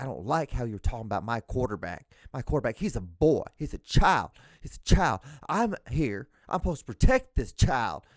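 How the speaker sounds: put-on loud Southern accent, coach voice. Speaker retells a football coach defending his quarterback, imitating coach's southern accent. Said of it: "He has like the southern accent too".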